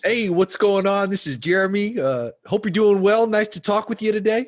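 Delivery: put-on, exaggerated salesperson voice. Asked by the group to act out how salespeople sound, fake salesperson voice. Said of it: "What's the salesperson voice?".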